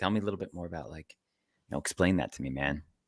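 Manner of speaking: put-on whisper. Retelling own phone talk at work, imitating own whisper. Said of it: "'cause I do that at work too".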